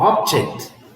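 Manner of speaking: object with stress on first syllable OB-. English word stress lesson on object: stress on first syllable of object. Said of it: "When you have the stress on the first syllable".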